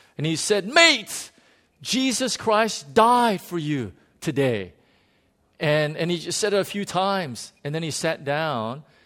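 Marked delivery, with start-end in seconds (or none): 0.7-4.7 loud, high, screamed-out shout. Retelling a teammate standing up in the back of the truck: retelling a loud scream. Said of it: "he screamed out in the loudest voice".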